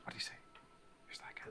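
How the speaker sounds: very quiet, faint, rapid, distant whispered voices. Describing voices coming faintly out of the forest, faint whispering voices. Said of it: "different voices kind of faintly coming out".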